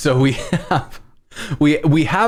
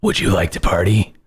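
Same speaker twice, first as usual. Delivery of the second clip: spooky, creepy voice, lower; 8 semitones lower than usual. Giving the Exorcist corgi a voice, speak in a creepy voice. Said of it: "you got to have the like the creepy voice with it".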